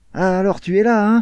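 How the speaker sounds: high honeyed lisping voice. Staples sits down at Franck's table, in Staples' honeyed lisping voice. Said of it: "la voix mielleuse et zozotante de Staples".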